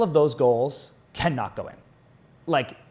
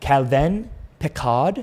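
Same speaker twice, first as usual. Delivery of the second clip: fake, put-on French accent pronunciation. Making someone french now and giving his new name: put-on french accent. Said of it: "I'm making him French now".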